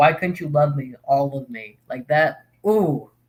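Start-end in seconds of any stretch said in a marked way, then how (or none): none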